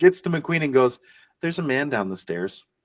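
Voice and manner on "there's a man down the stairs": totally unbothered, super calm, soft, acted out. Retelling what a nurse said after screaming in a stairwell: retelling a super calm voice. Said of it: "with a super calm voice".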